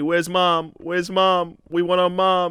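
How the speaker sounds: put-on high, slow, tearful crying child voice. Single father retelling his boys asking for their mom, imitating crying kids. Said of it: "And they're crying".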